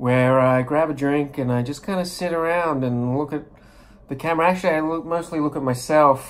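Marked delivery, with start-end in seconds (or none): none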